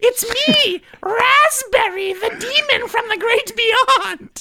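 squeaky little gremlin voice, very high, cackling. Asked to do voices for animatronics, answering in a high-pitched gremlin voice. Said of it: "Can you do a high-pitched gremlin cackle?".

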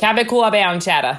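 speaking with Long Island accent. Asked to say a cheese name in her Long Island accent, speaking in Long Island accent. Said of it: "Can you say that in your Long Island accent?".

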